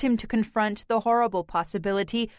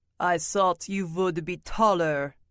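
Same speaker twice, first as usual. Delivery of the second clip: deep, low dragon voice rumbling from deep down; 4 semitones lower than usual. The dragon answers Harrison's hello, looking at him straight on, in a loud, deep dragon voice. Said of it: "said the dragon in a voice loud and deep".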